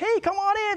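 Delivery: very high, inviting, friendly, welcoming tone. Describing how a man greeted the speaker before his voice turned angry; imitating a friendly welcome.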